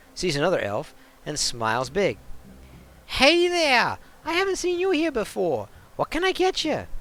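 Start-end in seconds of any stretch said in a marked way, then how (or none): 3.1-6.9 put-on New York accent, high pitched. Cherry greets an elf she hasn't seen here before, in a New York-ish accent. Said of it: "say it with that kind of a New Yorkish accent".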